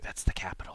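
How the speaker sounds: soft, quiet, breathy, near-whispered voice. Voicing a companion answering the party, quietly spoken. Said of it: "she would kind of quietly say".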